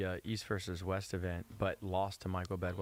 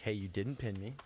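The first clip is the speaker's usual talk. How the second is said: ordinary talk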